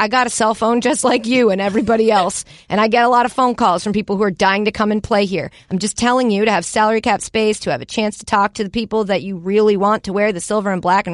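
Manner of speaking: ordinary talk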